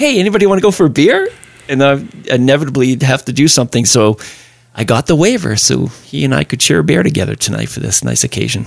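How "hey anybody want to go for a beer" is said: high, fast, eager and bright call. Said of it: "Rusty's always the first one that says".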